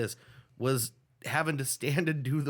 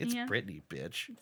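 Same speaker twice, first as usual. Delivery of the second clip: sassy, with put-on attitude laid on; 5 semitones lower, 7 dB quieter than usual. Repeating a catchphrase for fun: put-on sassy delivery. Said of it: "I like saying that all sassy".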